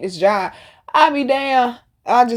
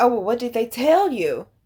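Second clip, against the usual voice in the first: alarmed, panicked, anxious delivery. Retelling a woman's reply about the ancestors: imitating panicked voice. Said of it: "some panic in her voice".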